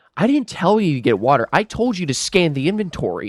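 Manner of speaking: mock-condescending, scolding, talking-down tone. Retelling how she told them off, in a mock-condescending manager tone. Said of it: "a very condescending, like you're stupid kind of tone".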